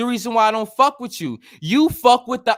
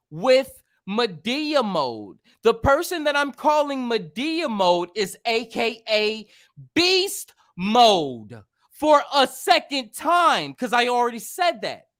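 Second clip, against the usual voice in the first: slow, deliberate speech, spelled out word by word; 4 semitones higher, 5 dB quieter than usual. Explaining again to someone who isn't listening: talking slowly. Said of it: "Let me let me talk slow".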